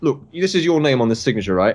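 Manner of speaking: ordinary talk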